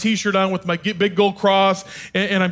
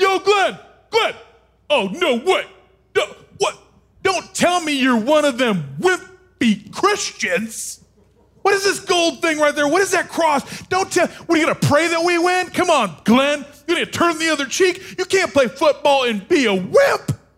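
mock yelling, raised pitch; 8 semitones higher than usual. Retelling how a huge guy walked over and yelled at him, retelling a yell. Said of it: "he starts yelling at me".

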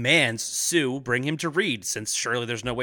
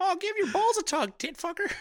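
very high, squeaky, silly put-on voice; 3 dB quieter than usual. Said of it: "I'm not gonna do the high-pitched voice for it".

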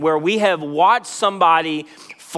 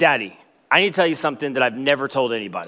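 put-on serious tone, lower; 4 semitones lower than usual. Retelling a son's confession to his daddy: imitating a serious tone. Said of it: "and it's, like, serious".

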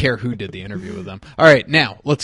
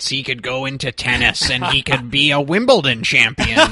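put-on wrestling hype-man voice. Retelling a podcast interview: Paul Heyman impression. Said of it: "pretty damn good Heyman impression".

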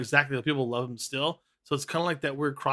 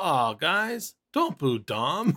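slow, stretched-out calling voice. Retelling how Cody told the crowd not to boo: imitating Cody. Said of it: "and gets up and goes".

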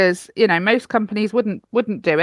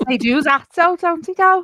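higher-pitched Liverpool accent; 9 semitones higher than usual. Chatting with a co-host about Eurovision in Liverpool, in a Liverpool accent. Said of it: "It's my best Liverpoolian accent".

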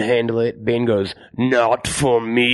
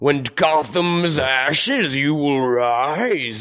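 put-on effete old British man, muffled through mask. Quoting the movie's odd line delivery: questioning old British man through mask. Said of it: "it's very like questioning".

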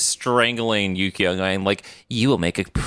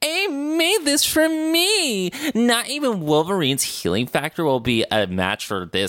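very high, cloaky, swooping sing-song voice, "me" drawn out; 10 semitones higher than usual. Recapping a scene, quoting Hideki after his dart kills a man: Hideki in the cloaky voice. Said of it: "I'm talking in the cloaky voice".

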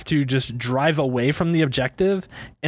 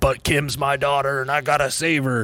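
put-on cowboy voice. Recapping a plot with a friend, quoting Jack Bauer as a cowboy. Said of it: "what'd you make him sound like a cowboy".

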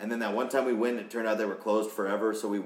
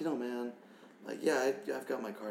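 soft, hushed half-whisper; 3 semitones higher, 6 dB quieter than usual. Imitating Carl talking about weed: half-whispering like Carl. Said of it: "You don't gotta whisper".

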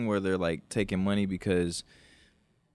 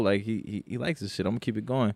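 plain

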